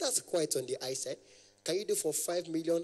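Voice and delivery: ordinary talk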